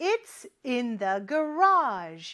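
very slow, clear, deliberate delivery. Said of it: "이렇게 얘기하면 되겠죠".

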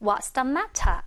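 slow, careful British pronunciation of t in matter. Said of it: "이렇게 들리겠죠".

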